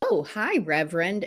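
put-on heavy sarcasm, very sarcastic. Recounting how people in the speaker's sphere greeted them, retelling a very sarcastic greeting. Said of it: "and very sarcastically".

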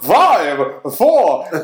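poorly done high sing-song cartoon voice, loud and swooping. Describing the Madagascar New Year's countdown for the kids, doing a King Julien impression. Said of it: "That was a terrible King Julian impression".

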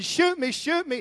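put-on, high-pitched shouting. Telling a true story of a friend robbed at gunpoint; retelling a yell. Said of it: "And he's yelling".

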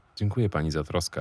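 plain

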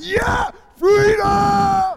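shrill, very loud, high-pitched battle scream. Speaker compares a rider in Revelation to Braveheart, mock Braveheart scream. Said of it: "Sorry, I'm screaming".

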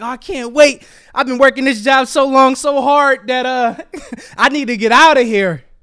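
put-on thrilled, happy, can't-wait excited outburst. Acting out reading an email about a job call: imitating someone happy. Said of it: "You happy".

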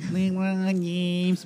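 squeaky, high, nasal nerdy voice. Comparing athletes' numbers, the speaker repeats a name as a meme, Steve Urkel-like voice. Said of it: "I know I sound like Steve Urkel".

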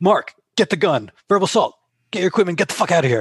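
angry barked yelling. Speaker retells a man yelling at the manager behind them, imitating Roger yelling. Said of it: "he yells at their manager".

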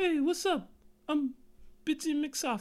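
put-on voice pushed way up, very drawn out. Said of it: "You pitch it up".

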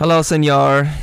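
odd, overdone, put-on Spanish accent. Voicing the dolphin Enrique as he greets his owner; Enrique's weird accent. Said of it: "when'd you pick up that weird accent there".

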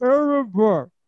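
put-on, very loud, high, muffled by full mouth. Retelling a man picking up the phone to give the answer; talking with mouth full of peanut butter. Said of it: "he's got a mouthful of peanut butter".

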